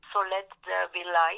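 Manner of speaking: slow, French-accented English.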